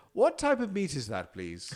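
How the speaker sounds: put-on very English accent, high and sing-song. Retelling her question to the taco cook, in a very english accent. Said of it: "she's never sounded so English".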